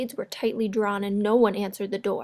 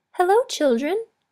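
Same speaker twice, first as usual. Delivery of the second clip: sweetly spoken, raised voice; 9 semitones higher, 6 dB louder than usual. Reading a story aloud, someone greeting the children in a sweet voice. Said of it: "someone said in a sweet voice".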